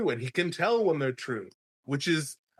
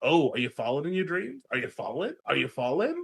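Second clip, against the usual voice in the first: blunt, tactless, pestering prodding tone. Retelling how a character questions a boy with no bedside manner: imitating a tactless character. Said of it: "the complete lack of gentle parenting is just like".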